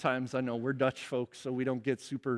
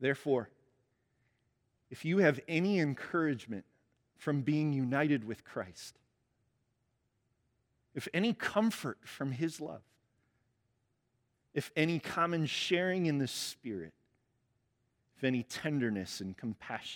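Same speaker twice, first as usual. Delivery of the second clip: slow, deliberate, unhurried reading aloud; 2 semitones higher than usual. Preacher reads Philippians 2 to the congregation before prayer: slow reading. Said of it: "I'm going to read it slow".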